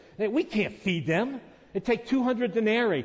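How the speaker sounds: put-on, high, incredulous, disbelieving tone. Retelling how the disciples answered him, acting out incredulous disciples. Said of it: "the disciples are absolutely incredulous".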